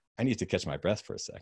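ordinary talk, nothing marked

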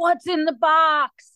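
mock yelled-out scream, stretched long. Recalling the box truck pulling up at their lookout point, retelling a scream. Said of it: "I screamed out".

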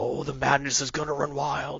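taunting put-on voice. Describing distant dragon calls in a game mod: Macho Man Randy Savage voice. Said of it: "you start hearing Macho Man".

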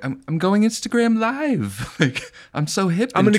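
"live" drawn out and pitched very high. Imagining a filmmaker going live on Instagram: Woody Allen impression. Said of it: "Isn't it funny to imagine him being like".

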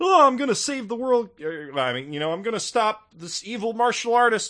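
very high-pitched, shrill, loud, projected character voice. Describing how a show's lead talked in one season: Ranma impression. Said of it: "my Ranma impression's not on point today".

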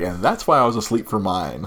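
ordinary talk, nothing marked

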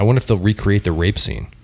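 normal talking voice

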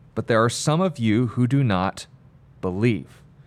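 usual speaking voice

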